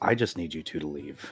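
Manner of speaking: put-on deep character voice. The narrator voices Airbane telling two others to leave, deep Airbane voice. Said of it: "In a deep voice that you have not heard from him yet".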